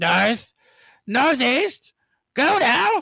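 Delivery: really irritating, bossy, high, loud crow voice. Describing how the crows talk, imitating one: annoying crow voice. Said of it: "It's like a really annoying voice".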